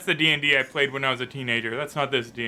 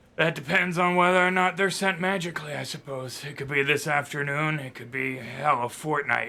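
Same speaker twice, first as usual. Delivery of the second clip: put-on half-drunk, defeated, despondent musing tone. A player asks Sildar about his provisions; half-drunk, despondent Sildar. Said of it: "Because he did seem about half drunk and a little despondent, missing both a ring and his shield at this point to the vices at the bottom of a cup. / he says, / Because he did seem about half drunk an".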